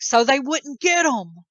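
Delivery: loud, high-pitched, angry scream. Retelling an argument in which he screamed at the speaker: imitating someone screaming. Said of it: "he's like screaming at me".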